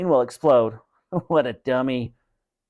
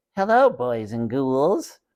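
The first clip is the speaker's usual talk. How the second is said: tiny, unhurried ventriloquist dummy voice. Narrator reads a boy working his brother's ventriloquist dummy, in a tiny Slappy dummy voice. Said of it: "he made Slappy say in a tiny voice".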